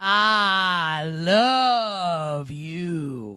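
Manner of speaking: put-on voice with a long drawn-out "I". Doing a best impersonation after thanking a guest: Bruce Prichard as Brother Love voice. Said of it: "my best Bruce Pritchard as Brother Love impersonation".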